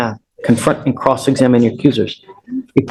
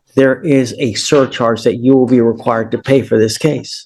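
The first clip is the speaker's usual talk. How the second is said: ordinary talk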